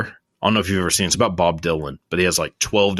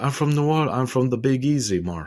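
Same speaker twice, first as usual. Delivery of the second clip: put-on laid-on Eastern European accent, pitched up higher; 7 semitones higher than usual. Discussing the movie The Disaster Artist, Tommy Wiseau impression. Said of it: "that is a Eastern European accent".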